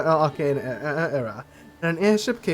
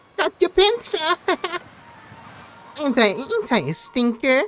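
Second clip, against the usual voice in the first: tiny, very high, squeaky crab voice; 12 semitones higher, 3 dB louder than usual. Voicing a crab heard through a speak-with-animals spell, in a squeaky crab voice. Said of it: "Sound that turns into a squeaky voice".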